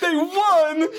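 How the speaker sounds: very high, loud, tearful blubbering crying wail. Imitating Christopher Daniels crying over a win: imitating Christopher Daniels crying. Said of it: "Daniels was probably crying like he did".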